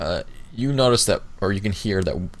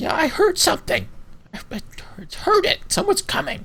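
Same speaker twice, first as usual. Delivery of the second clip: very high, bickering, squabbling creature voice. A narrator voices one of two creatures the listeners overhear: bickering creature voice. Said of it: "creature type voices".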